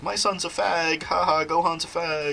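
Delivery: high, very slow, drawn-out cartoon voice. Speaker quoting someone who was using his Goku voice, Goku voice. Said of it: "he was using his Goku voice".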